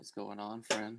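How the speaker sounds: stealthy, soft, hushed half-whisper. Getting as close as they can to a guy and speaking to him: half-whispering. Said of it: "just like whisper to this guy".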